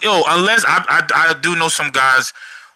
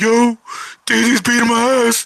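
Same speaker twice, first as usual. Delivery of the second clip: high, mock-tearful, pleading crying voice; 7 semitones higher than usual. Picturing himself calling his brother for help, imitating someone crying. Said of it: "call my brother crying like".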